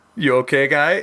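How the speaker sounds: put-on Russian accent. Retelling checking on a winded friend after a crash, in a put-on Russian accent. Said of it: "for some reason a Russian accent".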